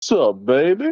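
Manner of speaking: tongue-in-cheek, jokey delivery. Retelling a joke line a high school friend always said: imitating a friend's joke line. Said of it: "one thing my friend always said".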